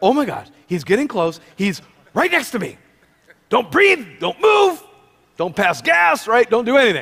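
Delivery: jittery, frozen, nervous, panicky inner voice. Retelling how new hires react when the speaker approaches: imitating nervous new hires. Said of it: "so they're really nervous".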